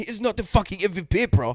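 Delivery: put-on French accent. Retelling what a guy said back to him, imitating the guy's accent. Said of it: "that's a good accent".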